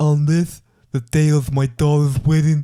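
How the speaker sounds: slow measured dramatic delivery. Quoting a Godfather line: Godfather impression. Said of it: "it's starting to get a bit more like it now".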